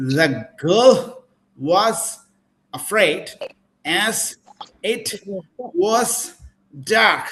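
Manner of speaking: very slow, broken, halting, choppy word-by-word phrasing. Accent teacher demonstrates the wrong way to phrase a sentence: choppy, unnatural phrasing. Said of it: "also it will sound unnatural".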